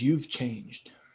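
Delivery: dull, flat, lifeless, toneless voice. Voicing a large man in an arena speaking to Oma: dull voice. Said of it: "in kind of this dull voice".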